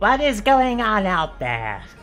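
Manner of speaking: almost comically high-pitched voice. Narrator voicing someone calling from inside the room, almost comically high voice. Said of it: "an almost comically high voice".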